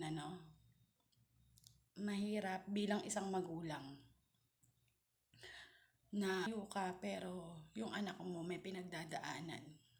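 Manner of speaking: tearful voice on the verge of crying. Sending a loving message to babe, tearful, about to cry. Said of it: "Naiiyak ako".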